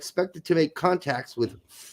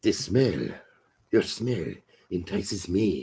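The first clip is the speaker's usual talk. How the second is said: put-on French accent; 10 semitones lower, 4 dB quieter than usual. Demonstrating a Pepe Le Pew-style line, Pepe Le Pew voice. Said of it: "You got to do more of a Pepe Le Pew thing".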